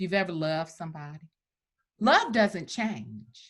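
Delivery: tearing up, voice choked with tears. Answering an interviewer's question about a book, tearing up. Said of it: "Sorry for, like, tearing up".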